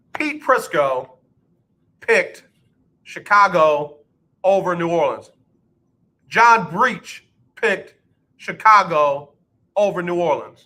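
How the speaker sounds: deliberate, slow, halting, word-by-word, broken into chunks. Speaker repeats another analyst's pick for emphasis, said again slowly. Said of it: "I'm going to say it again slow".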